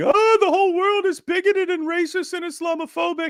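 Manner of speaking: play-acted very high, shrill, screeching indignant screaming. A speaker caricatures the reaction to any criticism of islam with mock screaming. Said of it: "you start screaming".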